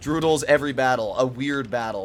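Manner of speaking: ordinary talk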